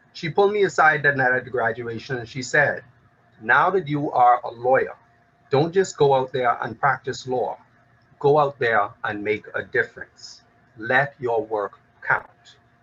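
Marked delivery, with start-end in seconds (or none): none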